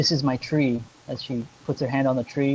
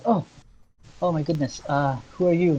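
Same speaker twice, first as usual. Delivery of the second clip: put-on teary, surprised girl's voice; 3 semitones higher than usual. Narrating a game, voicing a crying girl whom someone has just surprised: tearful, startled girl. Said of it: "She's tears, and she snaps away. She's like".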